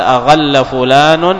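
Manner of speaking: ordinary delivery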